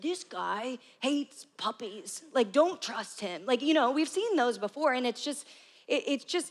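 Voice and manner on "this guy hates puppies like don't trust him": deep, slow, dark, ominous narrator voice. Imitating the narrator of dark political attack commercials: ominous deep attack-ad voice. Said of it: "ominous, dark commercials where this guy has this deep voice".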